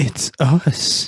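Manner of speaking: loud, frightened, scared cry. Asked for another take of the same line, the performer says it more scared. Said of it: "but more scared?".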